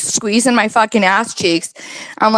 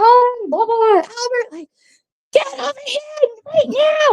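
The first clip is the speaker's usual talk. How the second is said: put-on screaming, much higher pitch; 14 semitones higher than usual. Retelling how a mom came down the stairs calling her son, imitating her scream. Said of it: "Colin's mom came screaming down the stairs".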